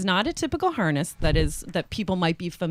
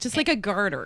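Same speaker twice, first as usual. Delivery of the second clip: plain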